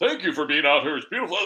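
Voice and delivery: quick, proper, polished newscaster delivery. Describing a reporter's video on the news: imitating a proper-sounding reporter.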